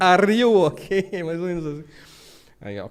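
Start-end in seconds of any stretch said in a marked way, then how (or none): 0.0-1.2 loud, heavy, clumsy bad Russian accent. Retelling what the Russian pilot asked in flight: imitating a Russian pilot's heavy accent. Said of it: "falando inglês com um sotaque horroroso".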